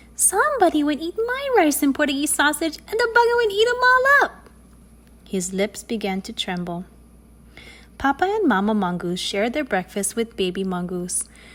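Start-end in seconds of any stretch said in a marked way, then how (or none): 0.2-4.5 tiny, very high, squeaky little voice. Narrating Baby Mongoose finding his breakfast eaten, high squeaky Baby Mongoose voice. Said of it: "in his high, squeaky voice".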